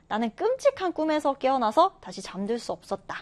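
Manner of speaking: ordinary talk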